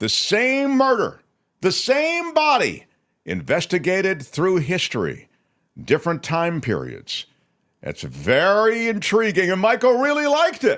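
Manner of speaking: gushing, carried-away, very stretched out, swooping and rising. Describing a Netflix thriller to the others, who ask why, yelling. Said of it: "Why are you yelling?".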